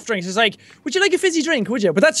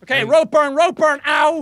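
overdone fake pained cries; 3 semitones higher than usual. Climbing a rope in a game, selling the immersion: pretend pain for immersion. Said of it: "trying to sell the immersion for the people at home".

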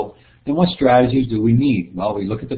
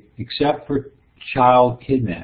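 ordinary delivery

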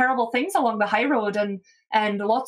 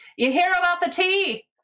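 high shout, called back over the shoulder; 8 semitones higher than usual. A character pouring drinks calls toward the kitchen window, shouting over his shoulder. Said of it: "while shouting over his shoulder".

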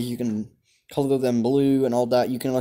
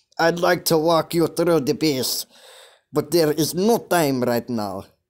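bad exaggerated German accent; 4 semitones higher than usual. Speaker trying out stereotypical accents of different people: bad German accent. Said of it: "I'm trying to do a German accent".

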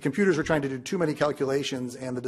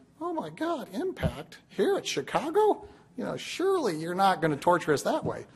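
small, high voice swooping up and around; 6 semitones higher than usual. Voicing the audience's imagined reaction to impact investing: little Jim Gaffigan voice. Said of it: "you got that little Jim Gaffigan voice going".

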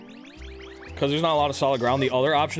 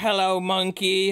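assumed alien villain voice; 7 semitones higher than usual. Reminding chat of a line by Frieza: Frieza impression. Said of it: "when Frieza was like".

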